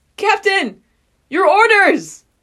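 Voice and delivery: screamed character voice. Acting out a scene, voicing Petra calling for orders: Petra screaming. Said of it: "she screams out".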